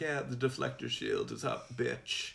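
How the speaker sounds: campy, mocking taunt with a rough creak. Paraphrasing how the Emperor mocks Luke: imitating the Emperor mocking. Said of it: "he's just mocking Luke".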